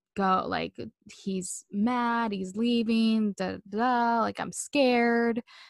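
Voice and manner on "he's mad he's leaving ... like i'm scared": very slow, weepy, crying speech. Retelling what a scared caller said on the phone, imitating someone crying. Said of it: "she's, like, crying".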